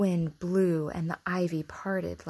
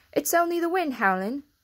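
hasty, rushed, quick, high hurried speech; 9 semitones higher, 6 dB louder than usual. Martha answers Mary about the strange noise she heard; said quickly. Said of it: "Martha said quickly".

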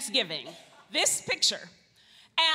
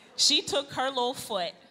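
ordinary delivery

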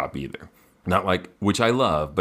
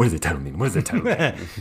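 put-on scared, fearful lion voice; 3 semitones higher than usual. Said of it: "Were you talking like the Cowardly Lion?".

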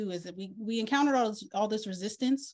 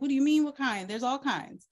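snarky, mocking, sarcastic delivery with pitched-up voice; 5 semitones higher than usual. Retelling own reply to a question, sarcastic reply. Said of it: "I just got sarcastic".

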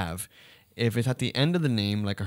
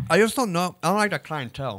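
mumbled through ice, pitched up and swooping; 8 semitones higher than usual. Discussing a mall clothing store's clientele, talking with ice in mouth. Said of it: "I have ice in my mouth".

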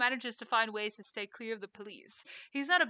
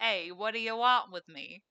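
tough-guy gangster voice, louder; 4 dB louder than usual. Improvising a character on request, a speaker tries out a gangster voice. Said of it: "I was gonna say a gangster voice".

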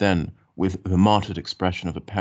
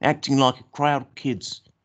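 high, scornful, contemptuous sneering tone; 7 semitones higher than usual. Narrator reading a boy speaking to his companion, scornful. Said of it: "he said scornfully".

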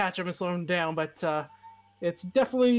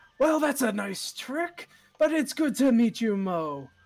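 big theatrical booming voice, louder still; 3 semitones higher than usual. A game master voices a character greeting Moe: booming, even louder voice. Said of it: "His voice was already booming, but now it's even louder".

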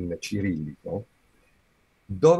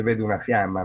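ordinary delivery

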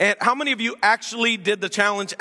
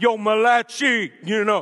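put-on, played-up fake Italian accent. Teaching on scripture, joking that malachi sounds italian: mock italian accent. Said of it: "it just sounds Italian that way".

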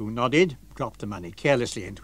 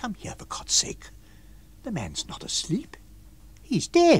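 soft, breathy, hushed whisper under the breath; 11 semitones higher than usual. A man turns suddenly to the landlord beside a motionless body, whispered under his breath. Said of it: "he whispered under his breath".

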